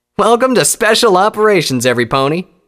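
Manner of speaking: very high, loud, bubbly, eager excited voice. A narrator reads scarlet's greeting to the ponies, enthusiastic. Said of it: "Scarlet said enthusiastically".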